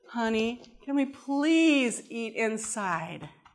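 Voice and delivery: slow, sugary, sweetest possible tone. Retelling asking a spouse to eat inside: imitating sweet asking. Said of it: "in the sweetest way possible".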